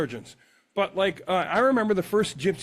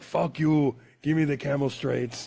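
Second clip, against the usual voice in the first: put-on Lebanese accent; 3 semitones lower than usual. Quoting a guy in a story on the show, put-on Lebanese accent. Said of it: "I did a Lebanese guy there".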